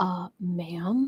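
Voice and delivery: put-on quiet voice. Retelling what men said after their first yoga session: imitating someone speaking quietly. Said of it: "they would come up to me very quietly and say".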